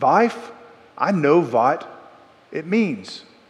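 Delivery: put-on thick European accent.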